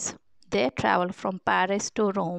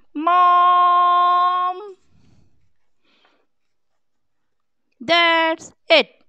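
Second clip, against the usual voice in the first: shrill, very loud high yelling, one word drawn out; 10 semitones higher, 8 dB louder than usual. The mother yells back at her two fighting children, yelling back. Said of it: "The mother yelled back".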